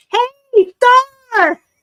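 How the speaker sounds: shrill, very loud, high-pitched shouting. Imitating older grandparents who shout into a cell phone: imitating grandparents yelling on the phone. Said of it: "You don't have to yell at me".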